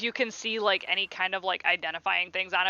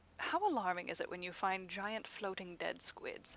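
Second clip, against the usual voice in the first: very quiet, little hushed tone; 12 dB quieter than usual. Retelling a scene where a woman asks a question as a man gets closer, hushed tone. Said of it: "in kind of like a little hushed tone".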